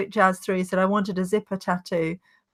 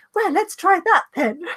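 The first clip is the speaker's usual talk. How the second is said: very high, loud, flamboyant camp man voice; 11 semitones higher, 5 dB louder than usual. Recalling to someone who was there what a man said, imitating a camp man's voice. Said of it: "so camp".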